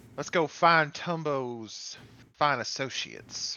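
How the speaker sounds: Southern accent. Suggesting the group go find someone, slipping into a Southern accent. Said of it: "I'm starting to talk in that accent".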